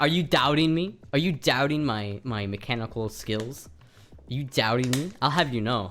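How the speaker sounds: put-on New York accent, slipped into. Arguing about swapping an engine into a car, the speaker slips into a New York accent. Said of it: "I went into a New York accent there".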